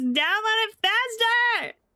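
impatient, high, loud, drawn-out shout.

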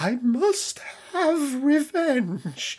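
very high, slow, drawn-out sinister whine. Reading a unit's reactive ability aloud in a Darth Maul voice. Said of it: "you do a good Maul impression".

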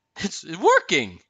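startled exclamation. The Duke sees Elsa conjure snow clouds over the villagers: cried out in surprise. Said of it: "the Duke cried in surprise".

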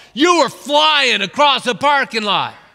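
put-on loud, high yell. Retelling what the other driver shouted after the car crash: imitating someone yelling. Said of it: "I hear this guy yell".

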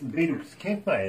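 ordinary talk

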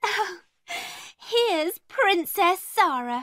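sneering, mocking, with a high little laugh. Narrator reads one girl greeting another on the stairs, with a little laugh. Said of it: "gave a little laugh".

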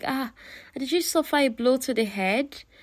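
high, pitying disbelief. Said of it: "he looked at her with pity".

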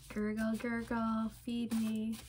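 put-on voice of a rumbling, hungry tummy. Joking that a rumbling tummy speaks: voicing a rumbling tummy. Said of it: "It's starting to go".

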